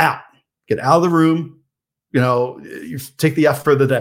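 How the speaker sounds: angry, high-pitched, sharp voice. Retelling sending a student out of the room: retelling a raised voice. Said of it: "So I raised my voice at the kid".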